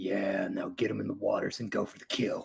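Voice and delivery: low, quiet mutter under the breath. Voicing a grinning character watching two others meet: muttering quietly to himself. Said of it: "quietly to himself just goes".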